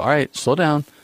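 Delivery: normal talking voice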